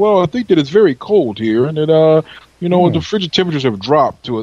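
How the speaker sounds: put-on posh, proper English accent. Telling a story about a man stopped by police, quoting him in a proper English voice. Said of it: "a proper English voice".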